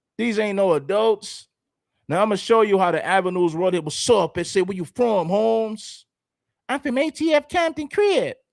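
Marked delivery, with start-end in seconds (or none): 4.6-8.4 put-on squeaky little-kid voice with rising pitch. Speaker acting out young kids from the avenues asking where someone is from, squeaky kids' voices. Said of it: "how squeaky they, their voices were".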